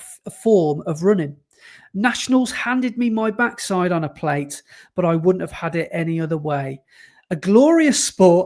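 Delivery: ordinary delivery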